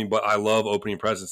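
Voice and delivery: ordinary talk, nothing marked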